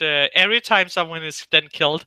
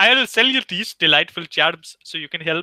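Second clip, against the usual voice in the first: put-on Nigerian accent drifting Indian. Voicing a person selling charms, in a failed Nigerian accent. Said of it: "He's from India now. I'm sorry, I can't do a Nigerian accent".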